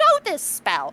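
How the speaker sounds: very high, aggressive outburst. Narrating a scene, voicing a woman who points at the spell: raised voice. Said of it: "Now she's raising her voice".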